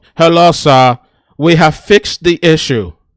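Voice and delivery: loud, slow, mechanical robot voice. Retelling a phone call from a caller who sounds like a robot, robot voice. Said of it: "this guy that sounds like a robot calls me".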